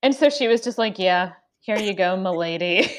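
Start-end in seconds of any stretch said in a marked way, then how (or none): 1.0-2.9 sullen, bored, unenthused waitress voice. Recalling a waitress who stayed in character, imitating her sullen delivery. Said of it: "a waitress who was like sullen in character".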